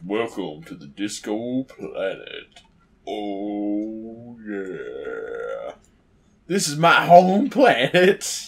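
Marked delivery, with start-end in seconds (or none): 0.0-5.7 deep, slow put-on character voice, swooping and rising. Voicing a character's line in a deep put-on voice. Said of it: "Deep voice".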